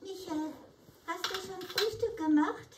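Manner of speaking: high, little dwarf puppet-show voice. In a kindergarten puppet show, a puppet asks Michael a question, Blaumütz puppet voice. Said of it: "Puppenspiel im Kindergarten - Juni".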